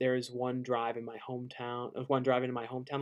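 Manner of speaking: ordinary talk, nothing marked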